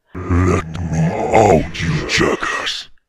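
put-on deep, gnarly, rough voice. Narrating a story, a voice from a buried chest speaks, deep gnarly voice. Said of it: "a deep, gnarly voice hits you in the ears".

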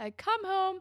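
high, loud yelling. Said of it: "yelling at her".

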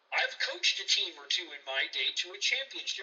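ordinary talk

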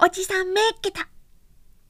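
very high, drawn-out, stretched-out shout. Reading a story aloud, a child finding the hiding place: shouting. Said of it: "という叫び声が聞こえた".

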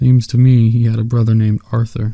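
plain

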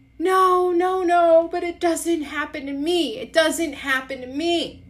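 very high-pitched, crying and sobbing through the words. Retelling what they said to her while sobbing, imitating their own sobbing. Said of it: "And I'm like sobbing and I say to her".

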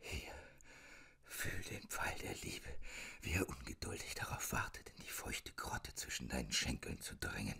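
whispered, whispering. Reading a novel, the narrator whispers to the girl. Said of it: "flüsterte ich".

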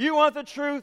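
high, snarling put-on challenging tone. Retelling a movie courtroom scene as Jack Nicholson: snarling. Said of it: "he snarls and he says".

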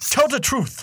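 terrible put-on South African accent, very high-pitched. Imagining a character looking at the camera, Will Smith South African accent. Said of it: "he had a South African accent in the movie. So I was doing an impersonation of Will Smith doing an accent".

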